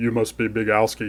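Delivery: voice dropped way down, very deep, heavy and low. Retelling meeting JTB at Evo, imitating JTB's deep voice. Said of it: "in his very deep voice".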